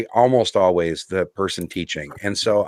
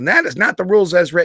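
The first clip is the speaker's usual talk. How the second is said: furious, high-pitched angry shouting; 8 semitones higher than usual. Retelling how a player yelled at the event organizer: imitating someone yelling angrily. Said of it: "lost her damn mind and started yelling at him".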